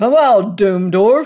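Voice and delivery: big, booming bellow, very loud. Narrating a man rattling a doorknob and calling through the door, in a big bellowing voice. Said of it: "he called in his big bellowing voice".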